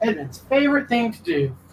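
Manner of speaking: sarcastic fake enthusiasm. Commenting as the group rolls for initiative: sarcastic tone. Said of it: "Is that sarcastic?".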